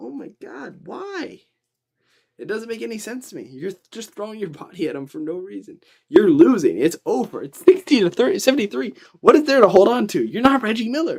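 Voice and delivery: exasperated, fired-up rant, very loud and high. Reacting to a losing team that keeps fouling; fired up, frustrated. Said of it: "I'm getting fired up over this".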